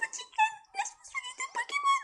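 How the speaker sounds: very high, throat-straining put-on character voice. Voicing a game character offering to heal pokémon: voice-straining put-on voice. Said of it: "je vais me niquer la voix en faisant ça".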